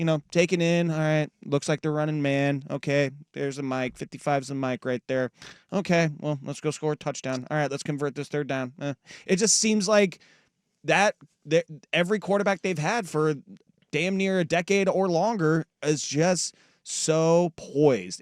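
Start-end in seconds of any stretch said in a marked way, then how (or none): 0.9-8.7 mock calm, cool, relaxed, unhurried musing. Imitating a quarterback reading the defense before the snap: imitating a calm quarterback. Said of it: "as cool as a cucumber the entire time".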